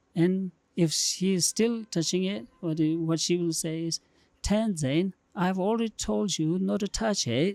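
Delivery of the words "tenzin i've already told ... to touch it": thick, strong, put-on British accent. Imitating an auntie telling tenzin a second time: strong british accent. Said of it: "with a strong British accent".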